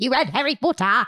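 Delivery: put-on, creature-like gremlin voice. Chatting with friends about reading books, in a gremlin voice. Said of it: "You sound like a gremlin".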